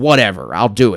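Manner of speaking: normal talking voice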